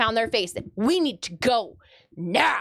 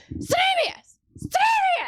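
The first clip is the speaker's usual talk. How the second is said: mock very high, full-lung yelling. Retelling calling for her husband from the green room: retelling a top-of-lungs yell. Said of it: "I'm yelling".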